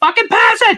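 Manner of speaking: high-pitched, loud screaming.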